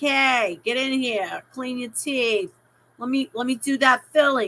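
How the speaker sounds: put-on strong native-sounding New York accent throughout. Imitating the speaker's new dentist, a New Yorker, in a New York accent. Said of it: "He's a New Yorker. He talks like this".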